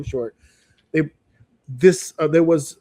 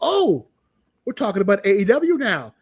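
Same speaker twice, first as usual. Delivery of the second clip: imitated yell, higher pitch; 4 semitones higher than usual. Retelling reacting to the TV screen: retelling own past scream. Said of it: "I screamed at my T V screen".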